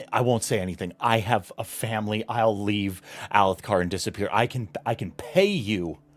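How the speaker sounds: very loud, high, frantic, panicked begging. Voicing a father begging an attacker for his life: father's panicked voice. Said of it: "you hear your father's panicked voice".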